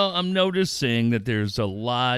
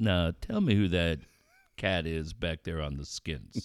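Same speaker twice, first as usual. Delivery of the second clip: low, soft, hushed show-host voice; 5 semitones lower, 6 dB quieter than usual. Retelling what a TV host often said about the drummer: low Don Cornelius voice. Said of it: "low Don Cornelius voice".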